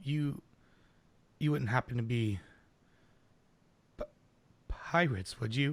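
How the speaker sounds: halting, hushed stage whisper. Voicing a character in a tavern, asking the players a question: half-whispering. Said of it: "he, like, whispers it".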